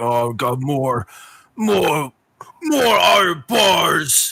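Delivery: high ogre mumble with the word "bars" drawn out. Narrator voicing the half-ogre the listeners hear, in a mumbling half-ogre voice. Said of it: "start to mumble like".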